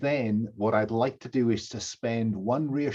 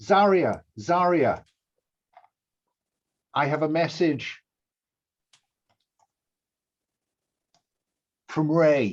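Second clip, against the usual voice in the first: loud, shouted calling out in character; 4 semitones higher, 5 dB louder than usual. Calling out to a wounded figure in a game scene: shouting in character. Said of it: "I'm shouting".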